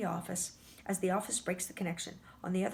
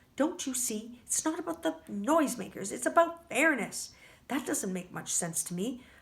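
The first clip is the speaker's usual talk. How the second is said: usual speaking voice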